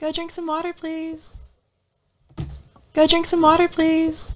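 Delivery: calm, gentle, soft, soothing coaxing tone. Recording a soundboard clip on a countdown: soothing voice. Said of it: "Why is that soothing?".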